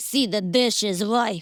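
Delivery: put-on disgruntled voice. Teasing the other speaker about a voice they use at home, mock-disgruntled voice. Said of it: "that's the kind of voice you're like".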